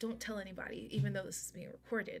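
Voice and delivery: hushed whisper. A streamer confiding something on a recorded stream, whispering. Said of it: "I don't know why I'm whispering".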